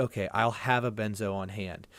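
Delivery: normal talking voice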